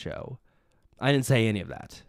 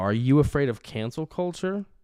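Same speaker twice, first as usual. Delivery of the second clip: sneering, needling, mocking taunting tone; 2 semitones higher than usual. Retelling how the speaker taunted a man, mock-taunting him. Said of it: "I'm mocking him now".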